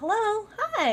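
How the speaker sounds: very high-pitched voice. Recalling greeting people while working in locations, high-pitched greeting voice. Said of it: "like it just instantly everything goes up".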